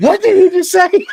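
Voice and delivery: very high, loud, laughing scream.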